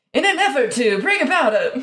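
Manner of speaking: put-on old-timey 1930s style voice. Reading a caption aloud, trying an attempted 1930s voice. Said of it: "That's not what they sounded like in the 30s".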